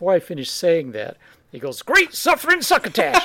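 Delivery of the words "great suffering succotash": very high, loud cartoon character voice. A deep-voiced man, told he can't do cartoons, instantly does a Warner Brothers cartoon character voice. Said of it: "doing a Warner Brothers cartoon character".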